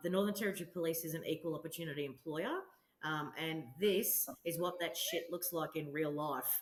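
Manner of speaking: plain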